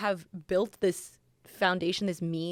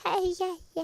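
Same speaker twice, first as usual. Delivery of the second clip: high put-on baby talk. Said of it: "he makes this fake baby voice".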